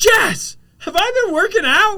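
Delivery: high, loud, amazed yell called out. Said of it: "And I go".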